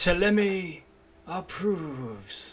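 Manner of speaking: stately, swooping pronouncement. Voicing the two top trees speaking as the hill: regal voice. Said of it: "using a, the regal voice".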